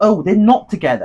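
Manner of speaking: plain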